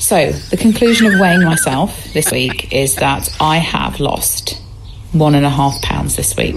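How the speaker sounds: self-satisfied tone.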